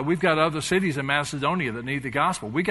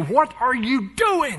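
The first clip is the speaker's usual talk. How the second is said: high-pitched scream; 10 semitones higher, 3 dB louder than usual. Preaching on a bible passage, acting out prisoners imitating someone screaming at god.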